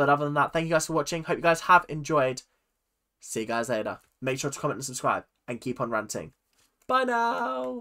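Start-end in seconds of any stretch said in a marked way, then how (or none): 6.9-7.8 very high, drawn-out cracking voice. Signing off to viewers at the end of a video, voice cracking. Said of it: "that was a bit voice cracky".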